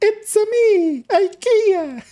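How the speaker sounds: very high, annoying cartoon voice. Speaker plays on a catchphrase, doing a Mario voice. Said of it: "the high parts with the it's a me".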